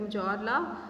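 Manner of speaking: usual speaking voice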